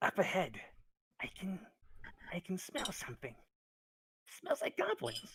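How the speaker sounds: very high, hushed whisper, pitched way up. Narrating a scene, voicing Meepo as the others come to the door: Meepo whispering. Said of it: "and he whispers".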